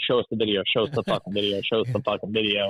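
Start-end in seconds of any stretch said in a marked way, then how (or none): none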